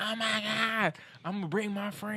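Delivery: put-on raspy woman voice. Quoting what the video production lady said: imitating her raspy voice. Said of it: "She got that little raspy voice".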